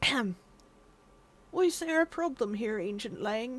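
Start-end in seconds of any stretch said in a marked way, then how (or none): 1.5-3.6 put-on soft little old man character voice. Voicing a king in a game, little old man voice. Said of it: "little old man voice".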